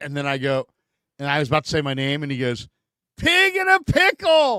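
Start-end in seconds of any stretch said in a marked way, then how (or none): 3.2-4.6 put-on very high, slow, drawn-out shouted outburst. Retelling how a man cut in before he could say his name, imitating someone yelling. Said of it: "He just yelled".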